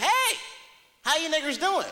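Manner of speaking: put-on eager, fired-up, high, excited voice. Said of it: "they got all excited".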